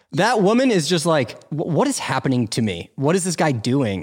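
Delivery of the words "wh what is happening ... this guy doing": ordinary talk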